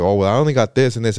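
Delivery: plain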